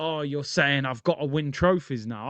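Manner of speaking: usual speaking voice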